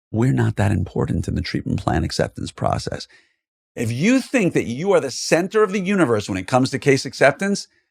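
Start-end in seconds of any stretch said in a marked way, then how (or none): 0.1-3.0 whispered aside. Sharing a little tip meant only for listeners not watching: whispered tip. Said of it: "I'm going to whisper it".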